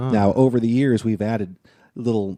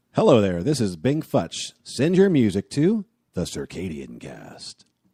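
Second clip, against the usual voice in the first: swooping movie trailer announcer voice. Recording a promo take for the show, in an "in a world" trailer voice. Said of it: "In a world voice".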